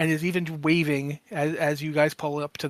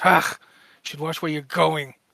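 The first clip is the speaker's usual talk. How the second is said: grouchy, sullen, surly, grumbling creature voice. Voicing a Skittermander who bumps into someone: surly Skittermander voice. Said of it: "he's the surliest Skittermander you've ever seen".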